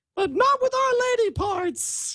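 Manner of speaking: put-on ladylike woman's voice, very high. Acting out a scene with a co-host, in a put-on woman's voice. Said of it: "can you say it in that tone of voice then".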